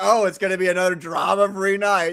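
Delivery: snide, mocking, sarcastic tone. Quoting the tone they read in a friend's remark, mock-sarcastic tone. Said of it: "That was sarcasm, ... I read that in your tone, like".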